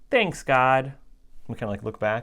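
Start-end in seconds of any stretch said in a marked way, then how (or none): 0.1-0.9 put-on, cute, little small child's voice. Retelling a four-year-old thanking God from the back seat: imitating Melina's little cute voice. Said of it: "we hear this little cute voice say".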